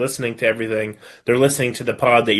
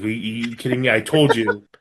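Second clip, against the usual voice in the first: plain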